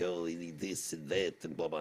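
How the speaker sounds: put-on French accent, smug tone. Retelling a European leader's complaint about NATO, in a mock-smug French accent. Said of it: "this guy is all smug with French accent".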